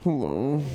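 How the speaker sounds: groggy, sleepy, sexy just-woken-up voice. Imitating a guy who just woke up answering the phone: sexy just-woken-up voice. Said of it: "When a guy just wakes up and answers the phone".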